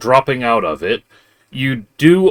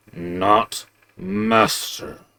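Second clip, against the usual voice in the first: low, deep, bassy growling voice; 6 dB quieter than usual. Game master voices something the players hear speak: deep, growling voice. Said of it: "you actually hear that deep, growling, uh, bassy voice says".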